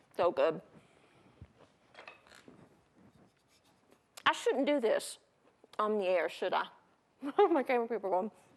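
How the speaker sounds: talking with food in mouth. Tasting a broken-off piece of food on air, talking with a mouthful. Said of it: "I got a mouthful of food".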